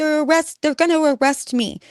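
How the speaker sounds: play-acted, very high, loud, shrill, frantic panic. Retelling a daughter's call about police: imitating someone freaking out. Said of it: "she was just freaking out".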